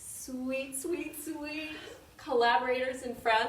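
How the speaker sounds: teary, choked-up. Host welcoming a collaborator and friend on a live show: teary, choking up. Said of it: "I'm getting teary".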